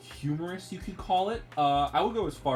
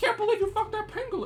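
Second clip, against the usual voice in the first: squeaky, very high-pitched voice. Speaker retells a cartoon scene with Randy and a pangolin; Mickey Mouse voice. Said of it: "you do a better Mickey Mouse".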